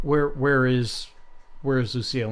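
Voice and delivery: ordinary talk, nothing marked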